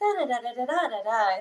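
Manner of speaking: robotic, machine-like voice.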